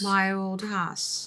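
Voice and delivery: British-accented voice. Asked for their best pronunciation of the film title, in a British accent. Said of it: "give me your best pronunciation of My Old Ass in a British accent".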